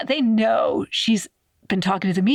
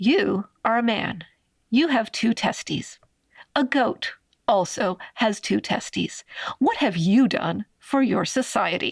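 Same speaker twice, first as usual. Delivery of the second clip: put-on sarcasm laid on thick, aggressive. Retelling a doctor's reply to a militia leader: imitating someone, aggressively sarcastic. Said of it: "I'm making it sound, like, way more sarcastic".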